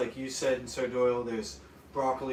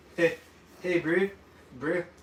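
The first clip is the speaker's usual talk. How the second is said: loud, clumsy, bad New Zealand accent; 5 semitones higher, 5 dB louder than usual. A streamer greets a viewer from new zealand, trying a bad new zealand accent. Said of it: "That's bad, right?".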